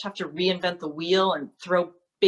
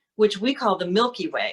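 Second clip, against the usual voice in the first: normal talking voice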